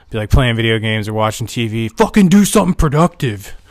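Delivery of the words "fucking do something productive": mock high-pitched yelling father voice. Recalling how your dad used to yell at you, imitating dad yelling. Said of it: "My dad used to yell at me all the time".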